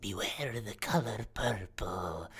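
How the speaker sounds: slow, hushed whisper, very close to the ear. Voicing an old woman who leans to a player's ear: whispering. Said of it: "as she just whispers".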